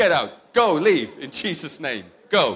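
very loud, firm, forceful tone. Showing listeners how to pray against pain, said like you mean it. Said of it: "Say it like you mean it".

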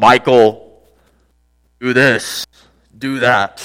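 deep, booming, very slow heavenly voice. Describing a voice from heaven he doesn't hear: imitating a booming voice from heaven. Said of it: "this booming voice from heaven go".

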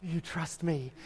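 soft, breathy, breathed-out voice. Retelling Aladdin reaching out his hand to the princess: breathy Aladdin voice. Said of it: "In the breathy voice".

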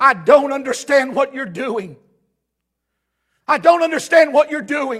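all-out loud scream at the top of the lungs. Retelling how a man screamed at god in the woods: imitating someone screaming at god. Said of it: "I screamed at God at the".

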